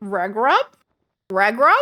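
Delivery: loud swooping cartoon-dog voice, "leg" said as "reg". Speaker attempts a voice they admit they can't do well: Scooby-Doo voice. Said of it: "I can't do a good Scooby-Doo voice".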